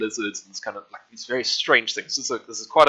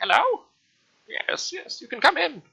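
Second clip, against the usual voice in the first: put-on very high, swooping, small old person's voice. Voicing someone inside after the player knocks on the door: little old voice. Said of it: "you can hear a little old voice from inside".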